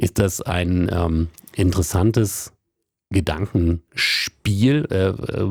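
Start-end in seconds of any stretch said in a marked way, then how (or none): 3.1-4.9 Spiel leaned on hard, slow and stressed. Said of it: "Betonung auf Spiel".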